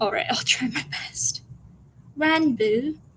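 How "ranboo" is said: put-on British accent, higher pitch. Reading a fan story aloud, trying a first take: Tubbo voice with British accent. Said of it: "I gotta do it in a British accent and try and say it like Tubbo would".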